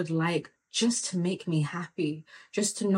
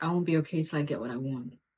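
put-on dead-serious tone, lower; 3 semitones lower, 3 dB quieter than usual. Retelling what dad told a shopkeeper: imitating dad being dead serious. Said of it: "my dad was dead serious".

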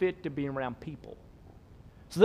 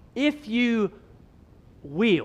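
will stressed hard, set apart after a pause. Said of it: "look at the verbs that Mark chooses carefully".

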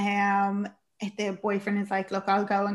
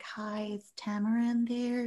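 put-on gentle, soft-spoken, slow, quiet girl's voice; 6 dB quieter than usual. Retelling a film scene where a girl knocks: imitating a soft-spoken girl. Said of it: "very kind of soft-spoken girl".

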